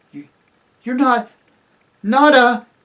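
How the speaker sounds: very loud, high, trembling, halting voice. Reading Susan's question to Aslan in the story: shaky voice. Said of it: "asked Susan in a shaky voice".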